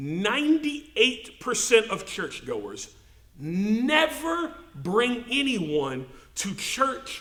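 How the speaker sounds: slow, wide-pitched, carefully spelled-out delivery.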